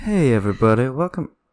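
creepy, unsettling delivery. A podcast host tries a take of the show intro, a creepy delivery. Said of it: "That's just creepy".

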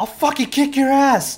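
very high-pitched, loud scream. Narrator describes what the players hear in the distance, Wes screaming. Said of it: "you hear Wes just scream".

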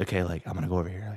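hushed whisper. Retelling whispering on the phone while creeping up, retelling a whisper. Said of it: "like whispering".

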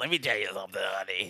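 put-on raspy older woman smoker voice. Imitating a chain-smoking woman the others want as a guest: imitating a chain-smoking older woman. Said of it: "She definitely has that voice".

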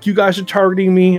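put-on screaming, acted yelling. Retelling being pulled over by a cop: imitating himself screaming. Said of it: "screaming and yelling, and I'm like".

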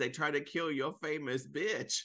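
pop-star voice, big soundbite delivery. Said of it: "you sounded like that [name]".

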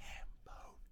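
silently mouthed, no voice at all. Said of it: "I'll just mouth the words".

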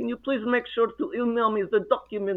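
put-on Russian accent. Retelling what the speaker once said to her, in a Russian accent. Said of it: "I talked to her with my Russian accent".

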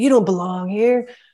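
acted angry yell. Retelling how a huge inmate in the elevator yelled at them: imitating a man yelling. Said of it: "and he's yelling at these guys".

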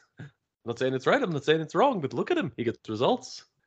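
put-on elderly man voice, high and quick.

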